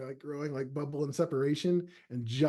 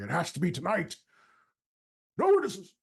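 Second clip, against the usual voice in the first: loud, booming, swooping councilman voice; 3 semitones higher, 3 dB louder than usual. Narrating a game scene where the players hear a councilman: loud councilman voice. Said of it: "that loud councilman voice saying".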